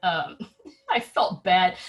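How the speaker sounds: light chuckling laughter through the words. Describing hawk parents arriving at the nest with no food, chuckling.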